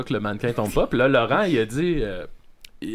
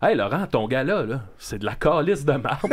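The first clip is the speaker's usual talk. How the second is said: ordinary talk, nothing marked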